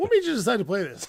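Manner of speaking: loud, snooty, judgmental tone. Retelling how they question a player's card choice: imitating a mean, judgmental question. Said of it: "I'm being mean".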